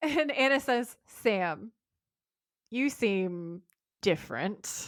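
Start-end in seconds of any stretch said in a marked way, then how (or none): 1.2-4.9 understated, slow, low-key, mildly accusatory tone. Retelling a scene from a show: imitating a low-key accusatory tone. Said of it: "In this, like, low-key accusatory way".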